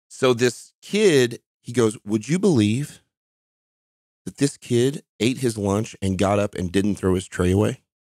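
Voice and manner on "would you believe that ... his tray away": ordinary talk, nothing marked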